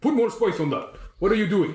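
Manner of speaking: high-pitched, barked delivery. Describing a dwarf chef who walks around ordering people: imitating barked orders. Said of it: "he's like barking orders to people".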